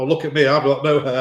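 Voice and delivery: ordinary talk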